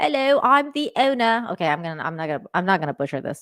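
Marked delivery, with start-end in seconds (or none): 0.0-1.5 put-on slow, drawn-out, pitched-up British accent. Imitating the pub landlord from the video: Mark Walton's British accent. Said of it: "he does have a British accent".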